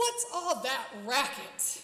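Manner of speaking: loud, grouchy, grumpy storybook voice. Reading a children's story aloud, voicing a mole in a grumpy voice. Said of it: "this is our grumpy voice".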